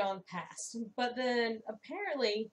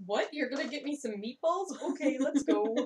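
speaking in a dog's voice; 3 semitones higher than usual. Voicing the dog replying about going for meatballs: Klaus dog voice. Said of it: "This is Klaus".

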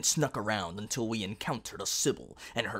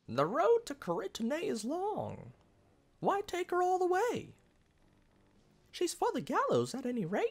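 very high, sing-song, squeaky cartoon mouse voice. Voicing a game character's line, the speaker slips into a Mickey voice. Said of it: "I'm making her sound like that Mickey voice again".

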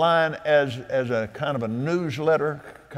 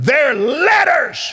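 very loud, very high, full-voice holler; 12 semitones higher, 8 dB louder than usual. Retelling how Roy hollered with a Bible in hand: imitating Roy hollering at top of voice. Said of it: "he hollered almost at the top of his voice".

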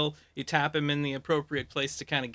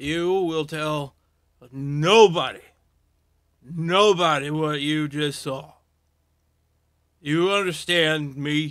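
loud slurred speech, "what" drawn out; 6 dB louder than usual. Voicing a character confronting someone who works there: slurred speech. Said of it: "the slurring is making it a little bit more difficult".

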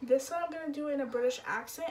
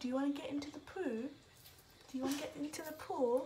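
fake British accent, quieter; 5 dB quieter than usual. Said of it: "let me know if I have a good British accent".

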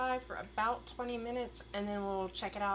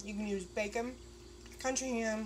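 speaking with food in mouth. A cook tasting the dish keeps talking to viewers: talking with mouth full. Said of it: "talking with my mouth full".

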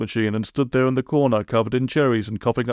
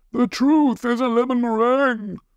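yelling at the top of lungs, very high, full-throated; 12 semitones higher than usual. Reading a story aloud, a character keeping watch suddenly yells at the top of his lungs. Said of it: "he yelled at the top of his lungs".

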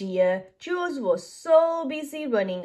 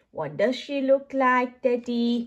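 plain reading voice

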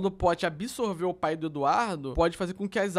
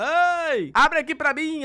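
put-on very slow, long shout, mãe stretched; 9 semitones higher, 6 dB louder than usual. Recalling shouting for mom to open the gate after forgetting the key, retelling a shout. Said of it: "eu gritava".

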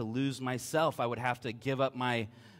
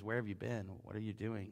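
mock tearful crying voice, much quieter; 4 semitones lower, 10 dB quieter than usual. Quoting a girlfriend's questions at the door, imitating someone crying. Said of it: "She's in tears".

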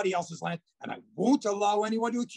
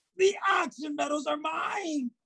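shouting, higher pitch; 6 semitones higher than usual. Character in a drama arguing with another, shouting. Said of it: "What's all the shouting for?".

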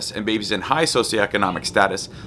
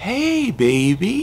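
put-on very high, octave-up, drawn-out baby talk; 11 semitones higher than usual. Showing how to say hey baby to a baby, up an octave. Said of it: "that upper register, taking it up an octave".

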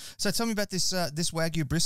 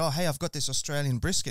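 plain

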